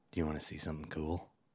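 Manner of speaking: very soft, conspiratorial, scheming goblin murmur. Voicing a goblin leaning in to a player: conspiratorial goblin voice. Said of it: "he says to you conspiratorial".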